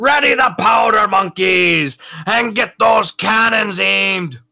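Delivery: very high, loud, ringing shout. Playing a character giving orders across to another ship: shouting across to a ship. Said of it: "he just shouts across".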